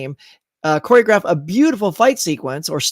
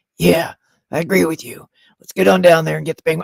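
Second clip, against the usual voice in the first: put-on whispering movie voice; 3 semitones lower than usual. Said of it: "And then Gordon goes".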